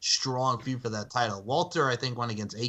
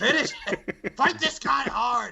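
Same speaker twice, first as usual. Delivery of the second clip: put-on, very high, loud, urgent screaming; 12 semitones higher, 4 dB louder than usual. Mocking a man who yells every time he loses, the speaker imitates his screaming. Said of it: "this little man is just screaming so loudly".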